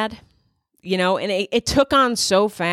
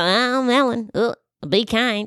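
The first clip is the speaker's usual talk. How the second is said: very slow delivery, every word dragged out; 4 semitones higher than usual. Doing a quick impression of a talk show host saying her catchphrase. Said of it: "she does".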